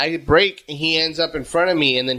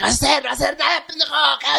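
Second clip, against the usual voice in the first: put-on drunken Spanish speech, higher; 12 semitones higher than usual. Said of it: "I've been drunk Spanish".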